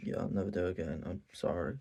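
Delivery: put-on half-hearted tone. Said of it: "the most bitch-ass apology".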